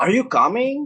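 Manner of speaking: pitch climbs at the end of coming. Explaining intonation, the speaker gives a yes-or-no question example with rising question intonation. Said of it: "it has a rising intonation".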